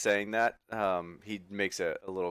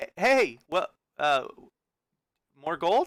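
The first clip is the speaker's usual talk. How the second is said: high, halting, stop-start stuttering speech; 8 semitones higher than usual. A familiar figure calls out behind the listener searching the streets, stammering. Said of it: "kind of stammer behind you".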